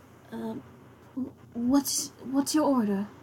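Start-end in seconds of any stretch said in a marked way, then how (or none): 1.6-3.1 put-on small, little teenage-boy voice. Game narrator voicing a teenage boy asking the table for their order: small voice. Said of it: "in a small voice asks".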